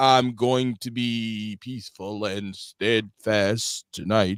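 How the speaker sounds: very slow, drawn-out delivery, lingering on each word. Mocking the other speaker's way of talking: imitating very slow speech. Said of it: "you take ten minutes to say half a sentence".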